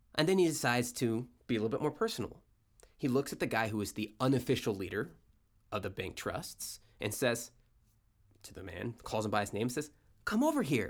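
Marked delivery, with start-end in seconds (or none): 10.3-10.9 put-on, fake pleasant friendly tone, higher. Retelling someone at a boardroom table calling a man over: imitating a fake pleasant voice. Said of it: "in a pleasant voice".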